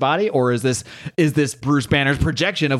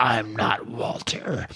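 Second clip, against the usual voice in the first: hushed, breathy monstrous voice; 3 semitones lower, 6 dB quieter than usual. Storyteller voicing Sasquatch as he answers another character, in a Sasquatch voice. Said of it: "This is how I envision this voice".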